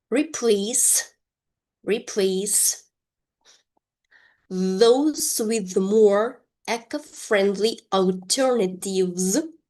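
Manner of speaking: slow, deliberate, careful word-by-word enunciation. A teacher pronounces a sentence again for learners to repeat, slow careful pronunciation. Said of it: "I will pronounce this sentence one more time slowly".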